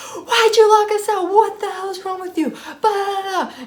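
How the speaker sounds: mock furious, very high-pitched, shrieking screaming. Retelling a roommate screaming about being locked out: imitating someone screaming. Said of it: "they start freaking screaming at me".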